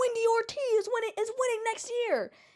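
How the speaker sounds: very high-pitched yell, acted out. Retelling what a man in the audience did: imitating a man yelling. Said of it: "So this guy yells".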